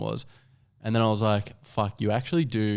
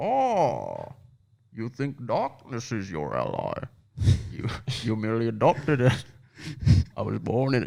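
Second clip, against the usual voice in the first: swooping, sing-song character voice, pitch up and down. Trying a Bane impression after being asked to: Bane voice. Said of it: "You wanna do the Bane?".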